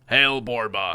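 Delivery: gruff, rough, gravelly troll creature voice. Narrator reading a fantasy scene, a troll hails Borba: rough gravelly troll voice. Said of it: "The troll's voice is rough and gravelly".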